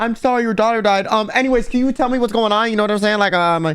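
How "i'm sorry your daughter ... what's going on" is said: sarcastic, callous mock reporter voice, higher pitch. Mocking a reporter who interrupts a grieving mother: mocking a callous reporter. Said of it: "So the reporter showed up to be like".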